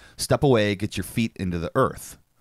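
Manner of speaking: plain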